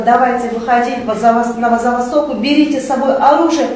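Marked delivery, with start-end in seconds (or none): none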